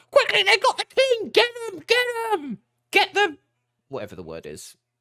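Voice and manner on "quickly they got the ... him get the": muffled, very high goblin chatter. Narrating to players, voicing goblins behind the door: muffled goblin voices. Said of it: "the sound of goblin voices in the sort of muffled".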